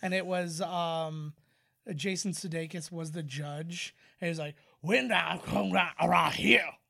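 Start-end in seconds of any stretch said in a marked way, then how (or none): 4.8-6.7 put-on Cajun accent. Recalling a Saturday Night Live sketch, quoting Jason Sudeikis's judge in a Cajun accent. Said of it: "the Cajun Court".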